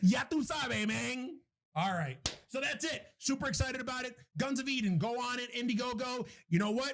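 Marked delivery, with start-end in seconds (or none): 0.0-1.4 thick put-on Spanish accent, very slow and drawn out. Asking parents to speak english, imitating a heavy spanish accent. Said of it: "Let me hear that heavy ass accent".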